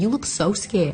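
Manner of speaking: put-on New York accent. Retelling what a woman said to her on her first time in prison: thick New York accent. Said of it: "this thick New York accent".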